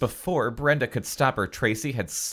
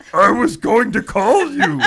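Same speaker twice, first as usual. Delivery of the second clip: very high, loud shouted character voice; 10 semitones higher, 7 dB louder than usual. Reading a book aloud, voicing a shouting boyfriend: voice like Grover. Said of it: "You sound like Grover".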